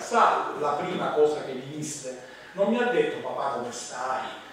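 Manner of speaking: ordinary delivery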